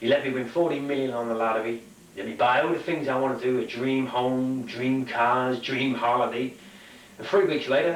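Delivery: ordinary delivery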